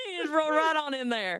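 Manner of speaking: fake cattle-country southern accent. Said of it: "stick with my southern accent".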